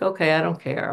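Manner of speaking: ordinary talk, nothing marked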